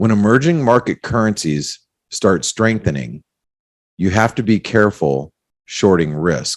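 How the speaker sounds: slow, deliberate, drawn-out, carefully spaced words. The speaker repeats the previous sentence for listeners, speaking slowly. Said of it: "let me say that slowly".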